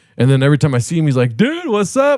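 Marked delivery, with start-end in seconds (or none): 1.4-2.2 very high-pitched, cheery, happy tone. Retelling a fan's usual greeting, imitating Anthony, happy and cheery. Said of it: "happy, cheery".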